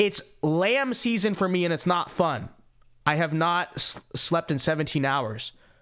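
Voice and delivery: ordinary talk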